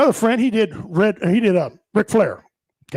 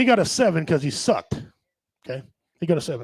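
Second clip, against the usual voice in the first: plain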